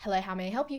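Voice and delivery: polite, very customer-servicey telephone tone. Describing their habit when picking up the phone, the speaker gives a customer-service phone greeting. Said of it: "Very customer servicey".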